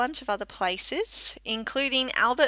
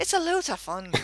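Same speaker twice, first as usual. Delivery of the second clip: fake Scottish accent, sounding Irish, much higher; 5 semitones higher than usual. Demonstrating a pronunciation for another speaker, in a put-on Scottish accent. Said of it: "I think you're Irish there".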